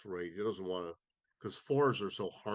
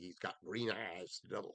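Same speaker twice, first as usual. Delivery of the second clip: soft, weak, inadequate Southern mountain accent; 6 dB quieter than usual. Describing a player the way they might say it in Tennessee, inadequate Southern mountain accent. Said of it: "inadequate imitation of a Southern mountain accent".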